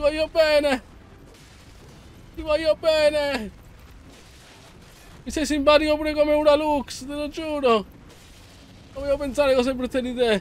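high, sweet, pleading voice.

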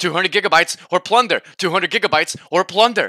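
very loud, high, threatening scream. Joking that his hard drive is chasing him, imitating it: mock screaming hard drive. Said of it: "basically screaming at me".

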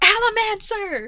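high, loud, slow scream and shout.

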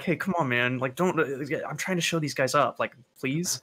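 hushed, pleading half-whisper. Half-whispering a plea to a character during a game: half-whispering. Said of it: "whisper to him".

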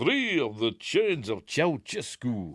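bad Romanian accent, laid on, sing-song. Asked who he is, a guest character answers in a bad Bela Lugosi impression. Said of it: "not doing a bad Bela Lugosi impersonation".

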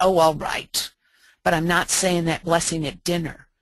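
put-on, grudging, grumbling voice. Retelling a daughter's reply about saying the dinner blessing: imitating a grumbling daughter. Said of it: "she grumbled at me".

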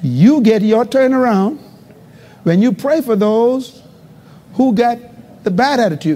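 very slow, halting, broken into pieces. A preacher repeating his point to the congregation, said slowly. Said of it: "Can I say it slow?".

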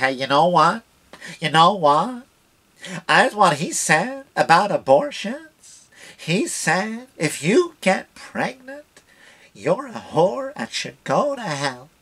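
slow, nasal voice, talking through the nose. Speaker retells what a woman said about Donnie, imitating a nasal voice. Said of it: "she talks to her nose".

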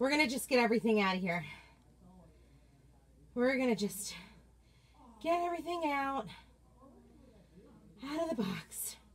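tired and out of breath. Speaker, winded from lifting something, talks to her viewers, tired and out of breath. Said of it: "I am so tired now".

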